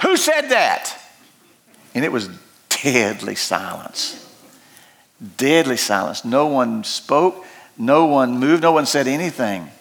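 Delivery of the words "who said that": sharp, high-pitched, far-carrying shout. Acting out a speaker challenged by a voice from the back, retelling a yell. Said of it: "Khrushchev yelled out and said".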